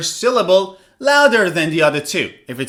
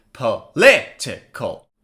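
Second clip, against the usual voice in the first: political, stress on second syllable -li-; 7 semitones lower than usual. Teaching pronunciation, model the word stressing second syllable of political. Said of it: "the second syllable should be read louder".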